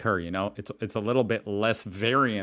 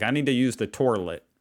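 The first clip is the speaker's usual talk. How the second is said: put-on American Southern accent, toilet pronounced torlet; 3 semitones higher than usual. Explaining regional pronunciations in America, imitating Southerners in a Southern accent. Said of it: "You know someone's really Southern".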